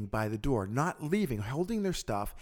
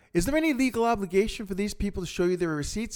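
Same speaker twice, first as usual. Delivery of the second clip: loud, raised, pitched-up voice projected to carry far; 7 semitones higher, 4 dB louder than usual. Speaker retells asking the guy checking receipts, for everyone to hear: retelling speaking loudly. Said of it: "I say loudly so that they can all hear me".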